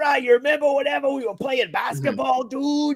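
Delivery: put-on Cajun accent, pitched very high. Retelling what he said to his buddy: Cajun accent like The Waterboy. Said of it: "you start getting the Cajun accent".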